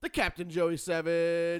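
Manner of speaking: shouting announcer style. Opening the show by announcing the team to listeners: yelling announcer intro. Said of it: "Who's he yelling at?".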